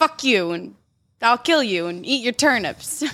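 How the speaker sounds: angry put-on Russian accent. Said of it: "You're like a stereotypical Russian mom".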